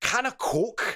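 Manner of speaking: very high, half-learned, fake Scouse accent. Speaker admits he can't do it yet, then tries an attempted Scouse accent. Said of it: "That's about as good as I can do, a Scouse accent".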